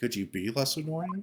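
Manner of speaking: sarcastic, sitcom-style heavy emphasis. Comparing a judge's wording to a sitcom, doing a Chandler from Friends impression. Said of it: "the judge is talking like Chandler from Friends".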